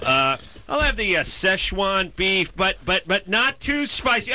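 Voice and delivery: high, slow, fussy delivery.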